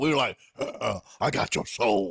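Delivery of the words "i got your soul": put-on devil voice, much lower and slower. Retelling what the group said at church using a voice effect, in a devil voice. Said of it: "actually make you sound like the devil".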